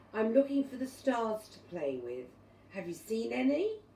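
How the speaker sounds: plain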